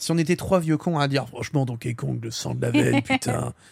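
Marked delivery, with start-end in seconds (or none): 1.3-3.5 put-on heavy smoker's voice. Mocking three old grumps praising a game: imitating a heavy smoker's voice. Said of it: "j'ai pris une voix de, de, vraiment de clopeux".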